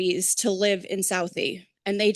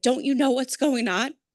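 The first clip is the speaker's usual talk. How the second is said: put-on screaming, higher pitch; 4 semitones higher than usual. Remembering screaming at people on 9/11, retelling a scream. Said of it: "I remember screaming".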